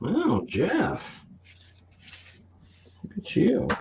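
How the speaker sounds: put-on enticing come-hither voice, slow, swooping, very drawn out. Reacting to a bidder's new bid: put-on come-hither voice. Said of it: "that's my sort of come hither by my heroic voice".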